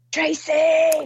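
acted, very high, stretched-out yell. Speaker retells her dad standing up in a silent room, retelling dad's shout. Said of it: "start shouting".

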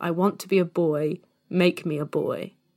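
mock, very slow, drawn-out, weepy, tearful voice. Retelling a childhood memory of crying on mum's lap: imitating own past crying plea. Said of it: "and I'm crying".

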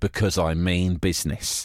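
put-on deadly serious, flat, deadpan, no joviality. Retelling a story, the speaker acts out John's answer about his suit: retelling a deadpan reply. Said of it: "with not a hint of joviality in his tone of voice".

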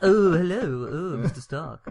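put-on odd British accent, very slow and drawn out. Acting out again the guy greeting Mr. Stark in Iron Man 2, weird British voice. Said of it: "I've just given him a weird British voice".

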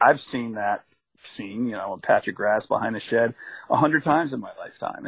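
ordinary talk

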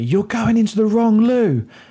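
sudden, high, acted shriek. Retelling a stranger's outburst in the toilets: imitating a girl shrieking. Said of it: "this girl has shrieked at me".

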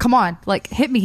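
ordinary talk

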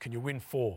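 put-on, mock booming voice. Retelling a night phone call from the chairman, speaker imitates his booming voice. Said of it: "he had this unbelievably booming voice".

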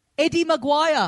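high, put-on Australian accent, called out. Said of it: "as a last-ditch effort, go".

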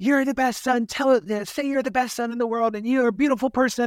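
high-pitched, rushed yelling. Retelling a speaker yelling his mother's words to the audience: imitating someone yelling. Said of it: "starts yelling to us about what his mom said".

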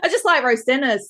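just hit loud and high.

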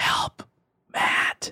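eerie hushed whisper. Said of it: "and it was a whisper".

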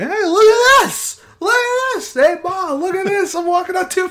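very high, loud, squeaking bear voice. Joking that Bigfoot was a bear on two feet, voicing a bear. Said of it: "a bear going".

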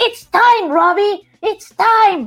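very high, loud shout out of nowhere. Retelling a calm scene where the actor suddenly starts to yell, imitating Mark Ruffalo shouting. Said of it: "Mark Ruffalo empieza a gritar".

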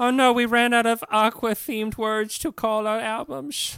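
put-on vague old Dutch accent. Telling a band's history, voicing the band in a vaguely Dutch accent. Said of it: "What accent is that exactly?".

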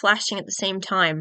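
ordinary delivery

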